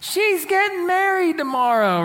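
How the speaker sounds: mock hollering, high and called out. Retelling a bride's friend yelling up to people on a boat, retelling a yell. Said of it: "And yells up to the boat".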